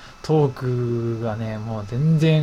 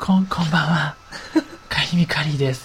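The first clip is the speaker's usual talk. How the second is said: faltering put-on celebrity voice, higher pitch; 3 semitones higher than usual. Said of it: "相当聞いてる方もドキドキするこう拙い感じのもう".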